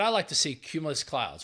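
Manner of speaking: ordinary delivery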